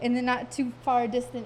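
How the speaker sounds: ordinary delivery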